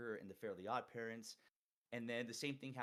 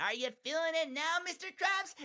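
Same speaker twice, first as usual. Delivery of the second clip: very high, loud, squeaky cartoon voice; 12 dB louder than usual. Speaker demonstrates the voice they used to do really well: SpongeBob voice. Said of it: "I used to do SpongeBob really well".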